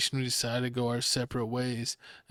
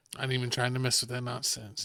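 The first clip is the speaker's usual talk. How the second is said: usual speaking voice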